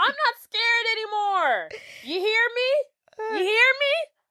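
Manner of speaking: very high, shrill yelling. Retelling a movie scene where Kevin yells outside: imitating Kevin yelling. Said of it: "He's yelling to nothingness".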